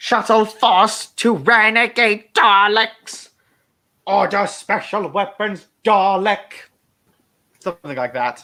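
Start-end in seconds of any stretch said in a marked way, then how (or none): 0.0-6.5 squabbly, high-pitched, slow drawn-out voice. Showing a favourite Dalek voice: squabbly Imperial Dalek voice. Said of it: "the voice where it's just kinda, like, a bit more squabbly".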